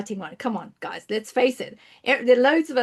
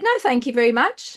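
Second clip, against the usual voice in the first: plain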